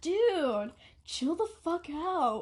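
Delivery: talking in a stoner-style voice. Retelling what Tendra said to the speaker: voicing Tendra as a stoner. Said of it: "that voice really made Tandra sound like a stoner".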